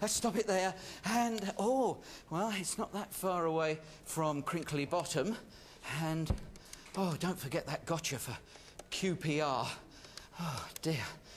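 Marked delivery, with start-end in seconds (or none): 6.0-11.0 out of breath, puffing, low and soft. A host telling listeners to pick up the phone, out of breath. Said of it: "I'm a bit out of breath there".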